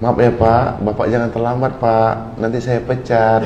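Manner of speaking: gentle, mild, soft and courteous tone. Demonstrating tones of voice with a warning about lateness, soft, gentle tone. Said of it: "Kan lembut tuh".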